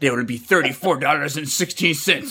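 put-on mad-sounding, angry Russian voice. Telling others about a Russian lady at a Walmart register, imitating a mad-sounding Russian cashier. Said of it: "it just sounded like she was mad".

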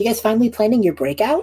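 playful, high, sing-song taunting voice. A voice calls out to the group from the corner of the room: teasing voice. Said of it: "There's like a teasing voice".

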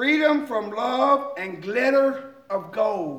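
slow, drawn-out reading, every word landing. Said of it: "I'm just gonna read them slowly".

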